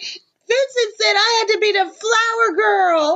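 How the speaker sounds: put-on very high, slow, sobbing wail of upset child. Retelling what an upset, crying younger brother said: imitating an upset crying child. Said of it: "He's so upset".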